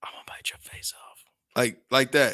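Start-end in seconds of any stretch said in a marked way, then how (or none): 0.0-1.2 put-on hard menacing whisper, quieter. Retelling what a woman said after being bitten: imitating a hard menacing whisper. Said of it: "hard, silent, strangle you from behind whisper".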